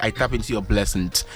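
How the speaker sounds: plain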